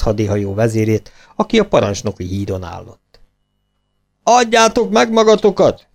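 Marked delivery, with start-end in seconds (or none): 4.2-5.7 very high-pitched yelling. Italian sailors call across to the opposing ship, shouting. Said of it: "kiáltották az olasz tengerészek".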